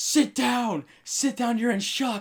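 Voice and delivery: very high, shrill, bossy, drawn-out yell. Retelling how a lady at the accident scene yelled: imitating someone yelling. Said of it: "yelling at me".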